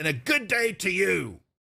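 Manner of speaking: put-on pompous elderly gentleman voice. Game master voicing a pompous old man speaking to Sildar, pompous old man voice. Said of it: "pompous, old, fat male human".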